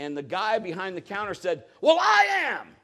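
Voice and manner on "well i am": heated, mad, loud, shrill, very high-pitched outburst. Retelling what the guy behind the counter said, imitating a mad, loud voice. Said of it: "in a mad, loud voice".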